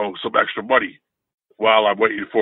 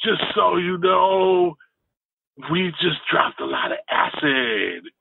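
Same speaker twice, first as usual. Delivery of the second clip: pitched-up California-ish surfer dude voice; 7 semitones higher than usual. Retelling what his dad said to the speaker: California surfer-guy voice. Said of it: "almost California-ish surfer guy".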